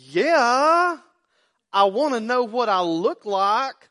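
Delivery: put-on very loud, very slow, drawn-out sarcastic attitude. Retelling her answer when asked about growing up, mock-sarcastic with attitude. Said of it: "a little sometimes sarcastic or with a little bit of a attitude".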